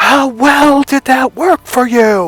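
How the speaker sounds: mock scream, very high, shrill and drawn-out. Retelling a question put to someone who kept bragging: retelling a scream. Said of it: "I screamed".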